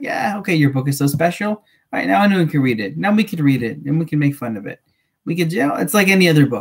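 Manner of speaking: ordinary talk, nothing marked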